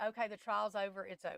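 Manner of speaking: ordinary delivery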